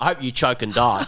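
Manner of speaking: rough, gruff man's voice. Retelling what a customer asked while ordering: imitating a gruff guy. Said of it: "this really gruff guy".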